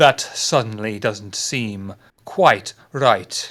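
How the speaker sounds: very low, deep, theatrical dramatic reading. Reading a text aloud to the others: a dramatic reading. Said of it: "that was quite a dramatic reading".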